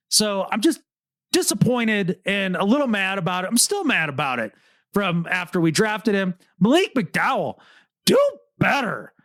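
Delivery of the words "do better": do better stressed very hard. Disappointed in a drafted player who wasted his career, strong stress on "do better". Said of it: "you did emphasize the do better very strongly".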